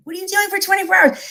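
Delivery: very high, frantic, panicked mock mother voice. Speaker retelling their mom's call before going live, imitating mom freaking out. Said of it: "That's not even what my mom sounds like".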